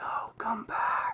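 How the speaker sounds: hushed, breathy whisper. Voicing an unseen figure calling a player back: whisper from behind. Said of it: "you hear a whisper".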